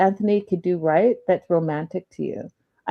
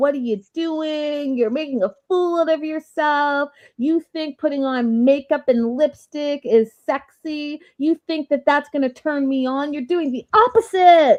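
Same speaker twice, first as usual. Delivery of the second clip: shrieking, hollering, screaming tirade; 8 semitones higher than usual. Retelling a wife's outburst at her husband: imitating someone screaming and yelling. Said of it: "She's screaming and yelling".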